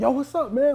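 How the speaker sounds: very high, loud, bursting with energy. Retelling meeting D in an elevator, imitating D, loud and energetic. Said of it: "Like he just was loud. He was energetic".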